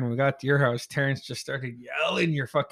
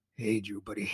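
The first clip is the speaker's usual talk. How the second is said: put-on drunk speech, lower and quieter; 5 semitones lower, 9 dB quieter than usual. Retelling how a drunk friend called out: imitating a drunk friend. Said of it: "he just kept saying".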